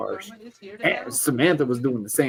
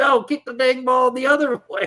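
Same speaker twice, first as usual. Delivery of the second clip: acted screaming, very high-pitched, shrill and loud; 13 semitones higher, 5 dB louder than usual. Retelling yelling at his daughter during her soccer game: imitating his own scream. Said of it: "literally I'm just screaming".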